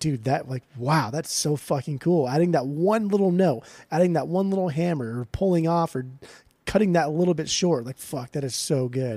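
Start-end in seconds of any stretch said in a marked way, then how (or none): none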